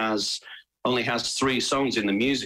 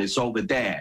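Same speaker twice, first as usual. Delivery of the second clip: put-on Chicago accent. Explaining how people in chicago pronounce 'there', demonstrating a chicago accent. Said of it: "in Chicago, they pronounce".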